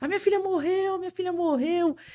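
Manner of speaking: high-pitched, loud shout. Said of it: "saiu gritando".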